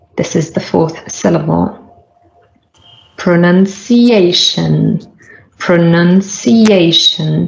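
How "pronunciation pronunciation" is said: slow, nun a bit louder, A strongest. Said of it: "you can hear that nun, the second syllable, is also a little bit louder".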